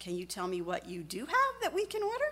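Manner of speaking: very kind, sincere tone with swooping pitch. Retelling what a man asked the waitress after four failed orders; retelling a kind, sincere voice. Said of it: "in a very kind and sincere voice".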